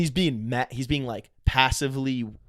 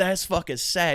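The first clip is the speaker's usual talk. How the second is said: put-on Southern man's accent, higher; 5 semitones higher than usual. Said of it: "that voice just".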